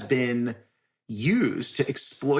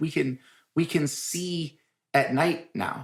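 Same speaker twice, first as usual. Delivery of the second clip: very slow, patronizing, talking-down manner; 4 semitones higher than usual. Retelling his answer about the new village light: imitating someone talking down. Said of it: "Like I was a child".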